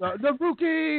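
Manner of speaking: high, slow yell. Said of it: "kept yelling".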